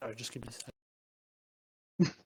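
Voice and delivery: talking while eating. Asking the others to wait a moment, talking while eating. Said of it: "I'm still eating".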